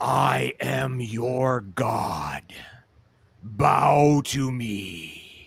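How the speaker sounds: booming, very slow, drawn-out god voice. Voicing the crocodilian heard from the throne: crocodilian god voice. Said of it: "you hear the same voice as the crocodilian".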